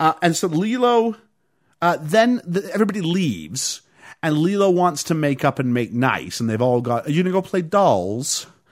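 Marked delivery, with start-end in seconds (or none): 7.1-8.4 put-on very English accent. Retelling a scene, quoting others talking to Lilo: very English accent. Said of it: "I said that very English".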